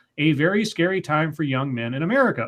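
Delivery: ordinary talk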